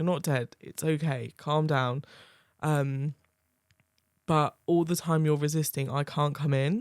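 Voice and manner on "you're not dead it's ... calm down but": ordinary delivery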